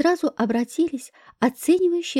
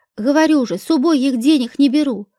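usual speaking voice

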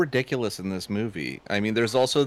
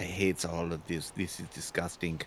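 put-on German-accented voice, lower and quieter; 5 semitones lower, 11 dB quieter than usual. Retelling a designer's reaction to a creature effect: Werner Herzog voice. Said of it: "I made him sound like Werner Herzog".

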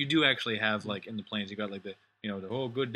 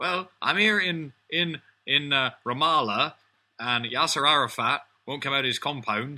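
put-on West Country accent, higher, louder; 5 semitones higher, 7 dB louder than usual. Joking about West Country accents, imitating a war correspondent with a West Country accent. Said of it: "talk with a West Country accent".

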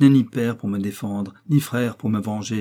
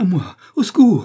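very high, loud, shrill crying out; 10 semitones higher, 6 dB louder than usual. Cornered in the count's house, a character cries out: shouting for help. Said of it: "le comte se mit à crier".

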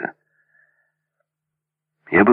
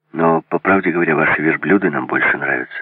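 plain

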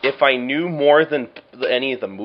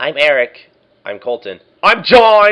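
ever-louder, more emphatic, swooping, rising delivery; 2 semitones higher, 7 dB louder than usual. Retelling how a friend's introduction went; getting louder and louder. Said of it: "It just keeps getting louder".

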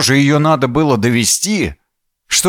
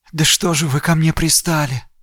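weary, husky, hoarse, level murmur under the breath; 3 semitones higher, 3 dB quieter than usual. The narrator's friend, finally speaking over a bugged line, mutters tired, hoarse and quiet. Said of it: "Усталым и немного охрипшим голосом тихо пробормотала".

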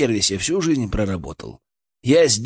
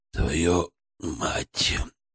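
deep, low, hushed, pained moan; 7 semitones lower, 7 dB quieter than usual. A man wakes with a splitting headache and struggles to sit up, groaning. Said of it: "простонал он".

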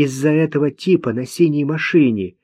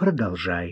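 very low, soft, calming, soothing voice; 9 semitones lower, 8 dB quieter than usual. [name] reassures the young man Kliman: soothing. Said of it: "успокоила она его".

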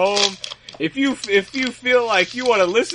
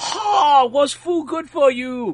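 put-on Chinese accent, pitched up; 5 semitones higher than usual. Speaker imitates a stereotypical little old lady, offensive fake Chinese accent. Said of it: "American trying to do a Chinese accent".

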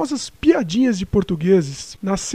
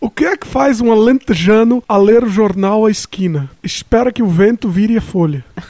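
put-on louder, heavier Portuguese accent. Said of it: "Tenta mais forte agora".

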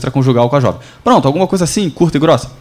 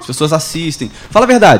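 ordinary delivery

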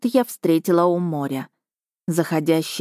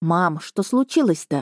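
ordinary delivery

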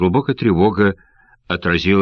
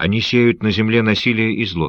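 usual speaking voice

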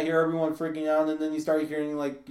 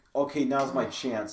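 usual speaking voice

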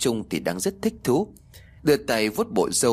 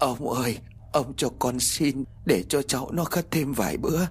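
breathless, faltering, stuttering stammer; 4 semitones higher than usual. An old woman speaks to a glaring old man, stammering, breathless. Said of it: "lắp bắp những câu không ra hơi".

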